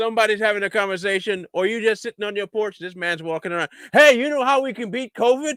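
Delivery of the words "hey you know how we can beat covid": loud, pitched-up, pushy street-style shout. Mocking a man in an ad who intrudes on a conversation: imitating screaming. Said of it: "why you screaming at me like that about covid".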